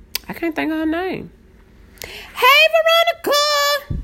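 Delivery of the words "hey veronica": squealy, very high-pitched, excited voice. Recognizing someone and greeting Veronica, in an excited, high-pitched voice. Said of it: "my voice get high-pitched".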